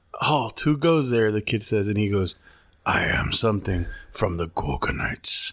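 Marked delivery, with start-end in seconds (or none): 2.9-5.5 movie monster character voice. Quoting a character from a childhood movie to a friend: Archer voice. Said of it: "I know how to do the voice".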